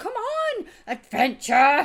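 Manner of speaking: high, loud, giddy, excited pleading tone.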